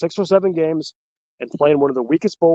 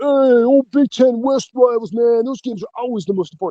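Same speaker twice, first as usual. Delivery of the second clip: Brooklyn accent, laid on for fun, pitched up; 7 semitones higher than usual. Acting out a view the speaker says is not his: put-on Brooklyn accent. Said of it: "I sound like I'm from Brooklyn".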